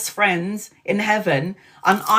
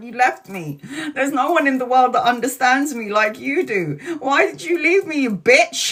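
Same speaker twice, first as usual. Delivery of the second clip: mock heated, bitter, angry, accusing outburst; 4 semitones higher than usual. Retelling what the speaker shouted at someone who left, retelling angry screaming. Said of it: "Stop screaming at me like you're angry".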